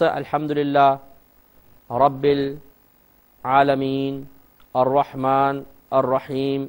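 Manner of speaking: short pause after each word. Showing how to teach reading a verse: short pause after each word. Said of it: "इस तरह वक्फा बीच में कर करके".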